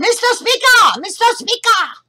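very high, shrill, drawn-out, repeated cries. Telling of a New York assemblyman's first session, acting out his very high-pitched cries. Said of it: "in a very high-pitched".

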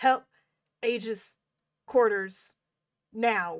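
loud shout, crackly and broken up like radio. The game narrator plays a call for help over the line, crackly and cutting out. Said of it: "it's kind of crackly and cutting in and out".

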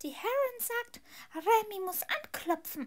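shrill, very high, loud elf voice. Narrator reading the elf Remy's line to Hermine, high Remy elf voice. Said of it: "sagte eine hohe Stimme".

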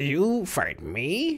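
creaky high voice, swooping up an octave. A man in his rail car answers Ryan's threat to fight, in a creaky high voice. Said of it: "The man's voice rose to a creaky octave".

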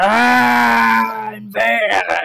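very high, very loud shrill scream, ah drawn out. Voicing a captured man as players grab him: screaming out. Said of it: "screams out".

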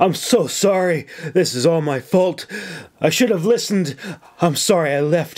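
gasping, near tears. A man tightly embracing a woman speaks to her, gasping out words. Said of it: "he gasped".

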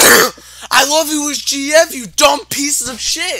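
very high, drawn-out shrieking scream. Playing a game with Brendan, screaming into the mic. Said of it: "I'm screaming into my mic".

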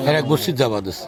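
normal talking voice

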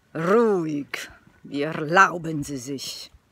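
snarling growl through clenched, gritted teeth. At the checkout, retelling growling at the man queued behind: growl through gritted teeth. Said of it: "gli ho ringhiato fra i denti".

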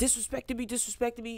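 mock repeated ranting, right in your face. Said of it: "All of that in my face".

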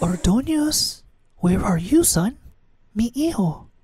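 put-on anxious, conspiratorial, strong drawn-out whisper, Spanish accent. A narrator voices his mother searching for him as a child; loud whisper, Spanish accent. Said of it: "like that of my mother born and raised in Spain. / It was Mother, / like that of my mother born and raised in Spain".

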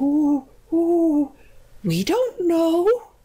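shy, timid owl hoot, very high and very slow. Two owls answer the old witch about her wand, hooting timidly. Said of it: "hooted the two owls timidly".

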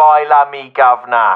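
low, put-on English accent by American speaker. Caller who grew up in Arizona shows off an adopted English accent. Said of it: "adopt this flawless English accent".

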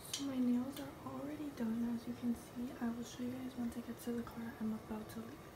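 very soft, hushed whisper.

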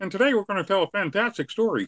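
very high cartoon frog puppet voice. Showing how you learn a voice from a Frog Prince record, in a Kermit the Frog voice. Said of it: "learn the Kermit the Frog voice".

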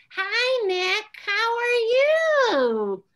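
very slow, sing-song, patronizing parent voice. Advising how to support him, the speaker demonstrates the parent voice to avoid. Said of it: "don't use a parent voice".

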